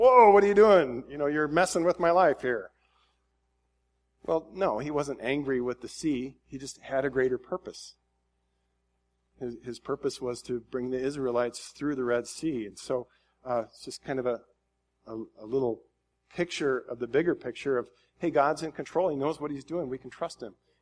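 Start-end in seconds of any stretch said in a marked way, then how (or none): 0.0-2.7 startled, high, loud protesting outburst. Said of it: "from the water's perspective, you could be like".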